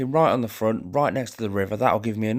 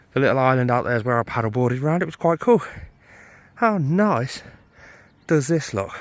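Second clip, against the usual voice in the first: out of breath, catching breath; 2 semitones higher than usual. Filming on a trail, the speaker talks while catching breath: out of breath. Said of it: "I'm just using this whole clip and the whole time of me filming to actually catch my breath".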